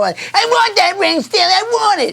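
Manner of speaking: put-on very high, bitchy girl voice with Italian accent. Retelling a movie scene where a girl demands a ring: imitating a bitchy italian girl. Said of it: "Real fucking Italian bitchy girl".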